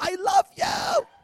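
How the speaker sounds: shrill, very high, called-out yell. Retelling a woman calling after the speaker as they walk away, imitating someone yelling out. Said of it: "she's yelling out after me".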